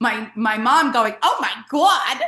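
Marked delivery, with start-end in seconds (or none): 1.2-2.2 startled, surprised blurted exclamation. Retelling the mom's reaction from the audience: imitating mom's loud exclamation. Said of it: "loud in the audience".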